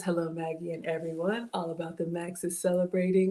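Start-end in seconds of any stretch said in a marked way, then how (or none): none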